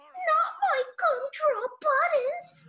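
very high, tiny, small, squeaky cartoon voice. Doing the only impression they can manage: Gingerbread Man impression from Shrek. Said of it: "it's the gingerbread man".

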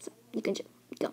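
fast, hurried, hushed whisper.

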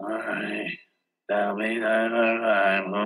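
put-on cold, distant, lifeless low monotone, drawn out. Speaker retells what a person said to them: imitating a cold, lifeless voice. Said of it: "there was no life in that person".

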